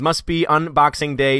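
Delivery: ordinary delivery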